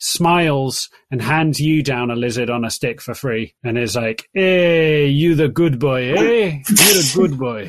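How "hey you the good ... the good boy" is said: condescending, patronizing brute voice, talking down. Voicing a barbarian who pats a player's head: patronizing barbarian voice. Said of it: "pats you on top of your head in a patronizing way".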